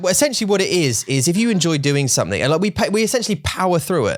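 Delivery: happy, cheerful tone, pitched way up. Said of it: "if I say this in a happy tone".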